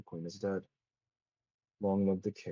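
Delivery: embittered, sour, deeply bitter tone. Game narrator voicing a character who sees a new flag, very bitter. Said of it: "very bitterly, um, Valencia goes".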